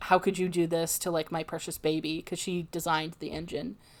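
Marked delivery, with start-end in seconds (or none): none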